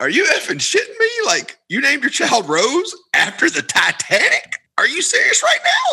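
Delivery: very high, swooping, disbelieving, incredulous rant. Retelling a man's reaction on hearing a couple named their child Rose: retelling an incredulous outburst. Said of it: "he just starts busting out like".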